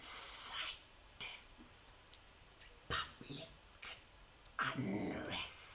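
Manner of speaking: whispered, slimy, slithering creature voice. A narrator voicing a creature that has just cracked its neck: slimy, slithering voice. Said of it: "in a slimy, slithering voice it says".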